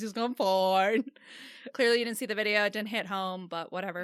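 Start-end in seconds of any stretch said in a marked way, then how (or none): 0.2-1.0 put-on spaced-out, dazed, stoned-sounding voice. Retelling a video where a guy answers questions: imitating a stoned guy. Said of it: "seems so stoned".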